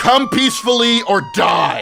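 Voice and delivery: shrill, storming, in-character yelling. Voicing a character who runs inside and yells: yelling in character. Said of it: "I run inside and just yell".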